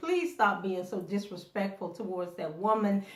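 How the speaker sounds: ordinary delivery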